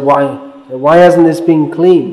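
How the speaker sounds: plain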